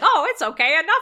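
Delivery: very loud, high-pitched, cackling through the words. Retelling how a movie character acted while poking a tied-up woman: imitating him laughing while talking. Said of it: "He is laughing the whole time".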